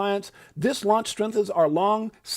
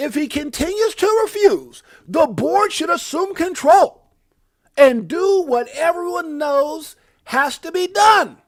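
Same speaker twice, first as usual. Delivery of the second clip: loud, bold, pitched-up delivery, every word hit big; 8 semitones higher, 7 dB louder than usual. Speaker reading aloud an all-caps post, doing a Trump all-caps voice. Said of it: "That was in my like Trump bold letter voice".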